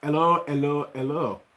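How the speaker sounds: put-on French accent. Greeting a viewer by name, put-on French accent. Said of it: "in a very uh, French accent".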